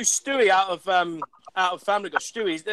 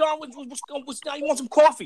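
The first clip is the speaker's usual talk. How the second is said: fake put-on New York accent; 6 semitones higher than usual. Trying out accents on the spot, a fake New York accent. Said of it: "You do it in New York".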